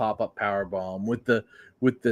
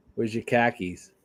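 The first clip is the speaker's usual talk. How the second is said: put-on Boston accent. Trying out a boston accent with a co-host after they discuss accents. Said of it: "We can do the Boston accent".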